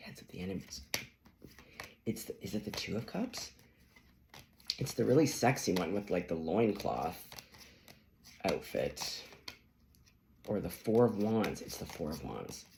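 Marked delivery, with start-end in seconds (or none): 0.0-3.5 hushed, soft half-whisper under the breath, barely voiced. Retelling what was said quietly in another reading: imitating own past whisper. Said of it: "'cause I kinda whisper".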